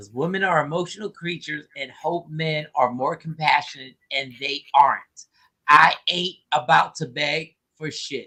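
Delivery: slow, careful, deliberate word-by-word reading aloud. Reading a commenter's final comment aloud to the group, reading slowly. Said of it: "let me read this slowly".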